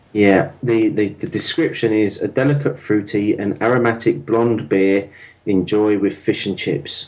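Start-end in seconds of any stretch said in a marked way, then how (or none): none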